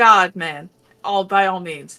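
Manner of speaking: ordinary delivery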